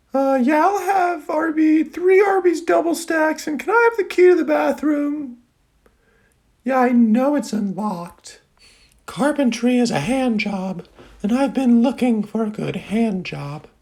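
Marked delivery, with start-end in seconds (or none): 0.1-8.4 offhand, unbothered, casual, pitched-up everyday tone. Doing another impression of himself, ordering at arby's. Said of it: "impression of me two hours and one minute ago".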